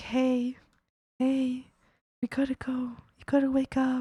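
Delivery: gentle, quiet, soft, slow murmur. Showing how they gently wake someone when running late: quiet voice. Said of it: "I'll be, like, so quiet about it".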